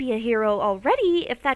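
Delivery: ordinary delivery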